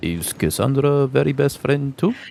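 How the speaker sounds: voice brought down to a hush. A character asks about a best friend, looking between two companions, lowered voice. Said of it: "She like lowers her voice".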